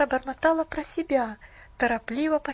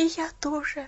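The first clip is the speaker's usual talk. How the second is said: spoken with a sigh. Pollyanna answers Nancy, sighing. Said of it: "вздохнула Поллианна".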